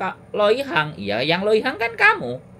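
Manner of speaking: high, loud, mock barking voice.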